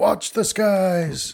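shrill, very high screaming cry. Narrator voicing a character with rage on his face: screaming. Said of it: "he screams out".

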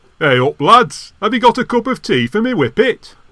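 put-on Northern English regional accent. Asked whether he can do accents, a man shows his range: northern english accent. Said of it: "I have a range of Northern".

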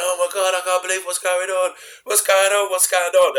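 acted panicked, stunned disbelief, high-pitched. Retelling a wrestler holding his head in shock: imitating panicked disbelief. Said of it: "he's holding his head going".

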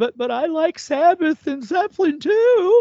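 mock tearful, sobbing, high, drawn-out crying voice. Retelling being smacked and taunted by a group, imitating crying. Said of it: "I'm literally crying, going".

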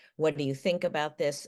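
ordinary talk

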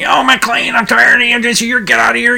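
high, fed-up mock police captain yell.

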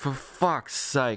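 mock muttering under breath. Retelling a moment of badly needing the bathroom: retelling a muttered curse. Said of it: "under my breath".

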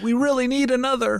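put-on pleading voice.

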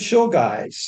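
put-on drawling Southern American accent. Students invite their professor to dinner; he accepts in Ed Sanders's Southern drawl. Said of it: "Southern American drawl he had".

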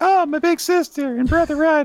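put-on very high little girl voice. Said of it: "I love her voice".

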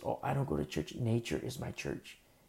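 very quiet, soft-spoken, hushed murmur. Imitating a woman who says nature is her church: imitating soft spiritual talk. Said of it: "they talk all, like, soft".

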